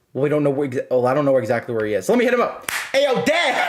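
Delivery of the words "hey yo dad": loose, casual, very high shout. Calling a dad in-game, a joke greeting: casual shouted greeting. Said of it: "I don't say it like that".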